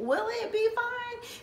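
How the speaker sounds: very high, slow, drawn-out tearful crying voice. Recalling being taught to give a self-injection, retelling own crying. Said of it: "And I'm just like crying".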